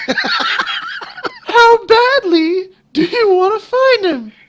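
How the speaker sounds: little voice. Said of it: "this little voice".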